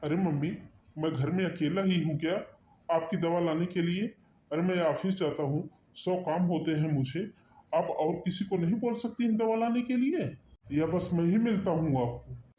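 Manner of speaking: angry, hot-tempered, heated protesting retort. A son answers his mother, who asked him for her medicine, with angry shouting. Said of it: "इतना चिल्ला क्यों रहा है?".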